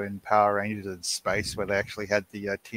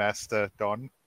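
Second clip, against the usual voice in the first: ordinary delivery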